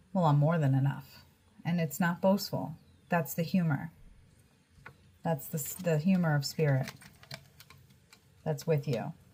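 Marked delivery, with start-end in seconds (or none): 0.2-1.1 acted sarcastic comeback quip. Relaying a quoted remark during a card reading: imitating a sarcastic remark. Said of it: "that sarcastic coming in".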